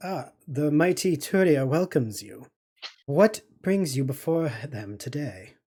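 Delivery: translator droid voice. Game narrator voices the droid translating for a Hutt, in translator droid voice. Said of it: "The translator droid next to him goes".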